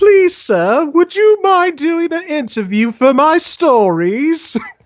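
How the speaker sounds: very high, drawn-out, put-on British accent. Asking someone politely for an interview for your stories, in a British accent. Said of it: "because that was a British accent".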